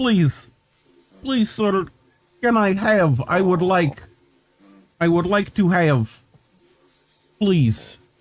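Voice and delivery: pleading cat voice. Voicing a cat in a video asking for food: voicing the cat begging politely. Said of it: "He's like".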